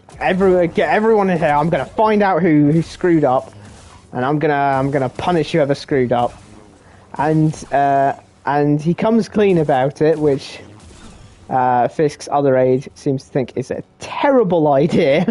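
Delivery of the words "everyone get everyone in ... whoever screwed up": ordinary delivery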